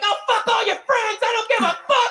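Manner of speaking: high-pitched screaming. Imagining what she screamed in his ear during a breakup fight, imitating a woman screaming. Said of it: "she was screaming in his ear".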